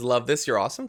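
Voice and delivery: ordinary talk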